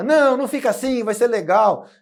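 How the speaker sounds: high, loud, forced smiling, reassuring voice.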